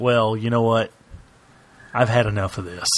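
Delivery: ordinary talk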